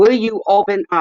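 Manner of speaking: very high, shrill, loud, nervous and panicky. Waiting for someone to call back, nervous and agitated. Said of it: "You're giving me a case of nerves here".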